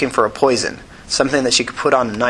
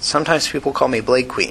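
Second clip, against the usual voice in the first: ordinary delivery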